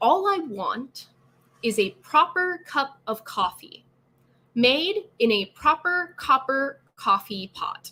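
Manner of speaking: very slow, every sound carefully articulated and enunciated. Tongue twister practice, first two lines, very slow and enunciated. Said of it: "in a very slow, enunciated way".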